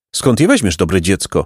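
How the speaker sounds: usual speaking voice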